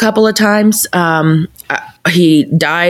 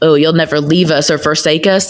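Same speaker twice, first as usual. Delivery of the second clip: mock, angry, scornful, biting sarcasm. Retelling past words to God after a death: imitating her own past sarcasm. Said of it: "I was sarcastic".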